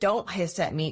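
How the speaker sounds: ordinary delivery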